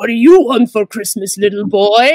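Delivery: goofy, evil, sinister villain voice. Retelling a castmate's silly on-set joke, doing an evil Santa voice. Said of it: "evil Santa".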